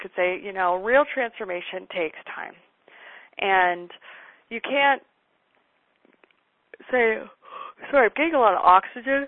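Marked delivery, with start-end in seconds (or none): 3.4-9.3 through a yawn, louder and higher. Speaker coaching listeners on what to say, talking through a yawn. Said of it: "through a yawn".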